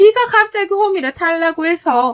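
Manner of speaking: high, loud, irritated, snapping, complaining tone.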